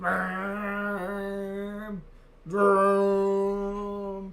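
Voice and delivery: goal horn sound with long, drawn-out vrooms. Celebrating a goal with a goal horn impression. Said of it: "Trying to do my best go horn impression".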